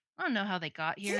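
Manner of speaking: ordinary talk, nothing marked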